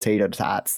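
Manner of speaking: imitated, put-on American accent. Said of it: "I like how you say it with the accent".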